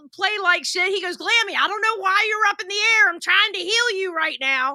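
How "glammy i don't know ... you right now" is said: angry scolding yelling. Retelling how a teammate yelled at another player during a game: imitating John yelling. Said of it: "He's yelling at Glammy".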